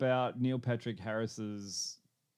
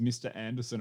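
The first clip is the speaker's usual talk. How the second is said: normal talking voice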